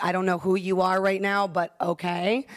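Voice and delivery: ordinary talk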